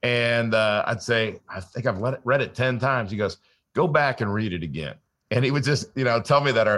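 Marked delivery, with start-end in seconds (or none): 3.7-4.9 put-on southern drawl, faster. Retell what he told you about rereading his book, imitating a great Southern drawl. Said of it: "he had the greatest Southern drawl".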